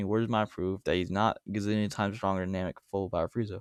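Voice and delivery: ordinary talk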